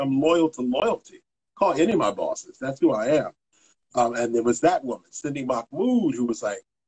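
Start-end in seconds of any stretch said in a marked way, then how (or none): none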